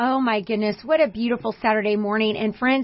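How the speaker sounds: ordinary talk, nothing marked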